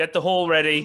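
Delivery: loud, high-pitched calling shout. Voicing a woman shouting to the gatehouse: shouting to the gatehouse. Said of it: "she shouts to the gatehouse".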